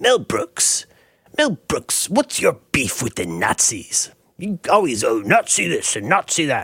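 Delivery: goofy, comic put-on interviewer voice. Quoting a famous line by the pompous interviewer character: Jiminy Glick voice. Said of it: "he talks like this".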